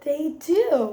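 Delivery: plain reading voice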